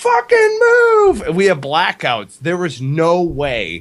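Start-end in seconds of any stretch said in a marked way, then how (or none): 0.0-1.2 put-on very high, all-out, top-of-the-lungs screaming. Retelling someone in the back screaming at traffic: imitating a scream. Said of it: "he was just screaming out the top".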